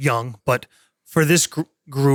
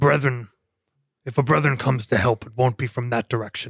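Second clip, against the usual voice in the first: rough-spoken, gruff voice. Game master voicing a council elder addressing the brethren; gruff. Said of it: "The gruff bearded man kind of nods slightly in, / uh, the the burlier young, not young, but for this gr- group, the younger of the two men, um, in his uh, probably in his fifties, / "You help us defea".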